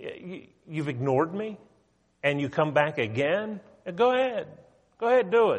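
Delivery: exasperated, frustrated, sarcastic tone. Retelling the Lord's answer to a man who asked again: imitating sarcastic frustration. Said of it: "you can almost hear the sarcasm".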